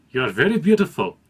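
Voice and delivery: terrible put-on Indian accent. Quoting what a man said to her, the speaker uses a bad indian accent. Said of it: "I'm going to do an accent".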